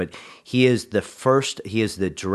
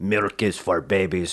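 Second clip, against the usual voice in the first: put-on Austrian-accented bodybuilder voice. Quoting a favorite line of Arnold Schwarzenegger: Arnold Schwarzenegger voice. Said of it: "That's my Arnold voice".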